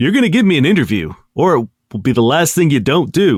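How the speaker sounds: acted menacing, mock-intimidating tone. Describing getting close to a guy to demand an interview, mock-intimidating. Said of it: "And I'm going to intimidate him".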